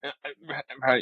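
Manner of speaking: halting, stammering, choked-up delivery. Retelling a phone call with exciting news: imitating being choked up. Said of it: "I started getting, like, choked up".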